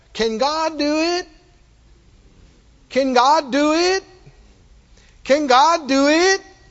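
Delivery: mock snide, doubting sarcasm. Speaker retelling how the people answered God back: mimicking a sarcastic tone. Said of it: "sarcastically say".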